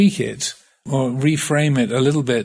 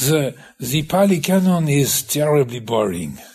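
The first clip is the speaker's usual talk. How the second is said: put-on bad French accent. Quoting what he said at the bookcase, in a bad French accent. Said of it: "Bad French accent".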